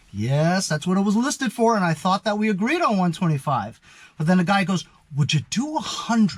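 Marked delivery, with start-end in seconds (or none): 5.1-6.3 gentle, soft-spoken, quiet voice. Retelling how the guy countered the agreed price, in a soft-spoken voice. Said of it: "In that kind of voice, you know, soft spoken".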